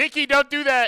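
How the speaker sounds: shrill, very loud, high-pitched yell. Recording a card shop show, the host calls out to someone, yelling. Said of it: "sorry for yelling".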